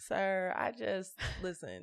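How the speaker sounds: acted giving-up voice. Retelling being asked by a man if the car is his, acting defeated. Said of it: "in the most defeated way".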